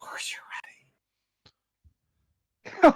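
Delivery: quick whisper right up close to the ear. Reassuring another player in character, hands on their shoulder: whispering into their ear. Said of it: "whisper into your ear".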